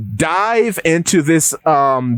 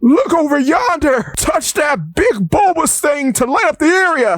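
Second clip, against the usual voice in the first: put-on funny, very high-pitched little old-man voice; 12 semitones higher than usual. Describing going down below, the speaker quotes the funny little old man: [name] old man voice. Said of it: "You find the funny little old man".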